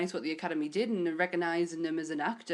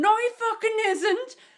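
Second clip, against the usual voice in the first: put-on screaming, higher and louder; 8 dB louder than usual. Retelling someone screaming at the TV during a film: imitating Anth screaming. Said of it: "Anth screaming at the telly going".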